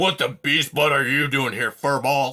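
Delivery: loud, snarling, animal-like beast voice. Narrator reading an animal's line as it catches sight of Poppy, snarling. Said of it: "it snarled".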